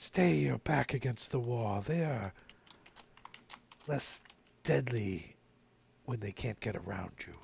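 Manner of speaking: hushed half-whisper, right at the ear. A game character moves up next to the player and half-whispers advice in their ear. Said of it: "Whispers in your ear".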